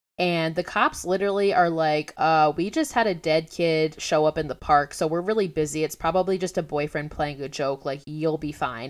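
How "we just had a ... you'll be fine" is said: usual speaking voice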